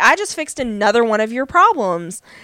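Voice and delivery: ordinary talk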